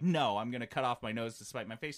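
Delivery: put-on snooty, petty, spiteful, haughty dismissive tone. Acting out how the developers might refuse the offer: imitating a spiteful refusal. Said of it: "Spiteful, like, turn their nose up and be like".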